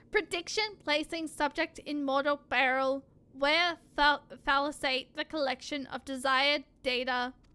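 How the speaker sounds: machine-like robotic speech. Voicing a character, the speaker goes back into the robot voice. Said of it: "doing the robot voice".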